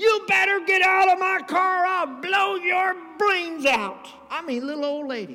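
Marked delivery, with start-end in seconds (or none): 0.0-4.1 fierce, shrill, very loud put-on screaming. Retelling a little old lady pointing a gun at men in her car, imitating her screaming. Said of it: "she started screaming at the top of her lungs".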